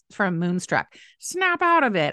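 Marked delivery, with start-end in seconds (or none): 1.2-2.1 bad diva voice, very high, boldly botched. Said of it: "To quote Cher from".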